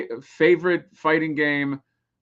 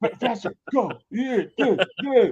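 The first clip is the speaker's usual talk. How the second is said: very high, pushy, insistent egging-on tone; 9 semitones higher than usual. Retelling how a director urged actors on: imitating a director urging faster. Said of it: "he's like".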